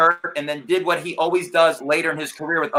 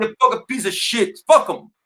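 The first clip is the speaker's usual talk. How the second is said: thick put-on Jamaican accent, much higher pitch; 5 semitones higher than usual. Speaker recalls a man who played up Jamaican stereotypes, imitating Garfield's thick Jamaican accent. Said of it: "and in his thick accent".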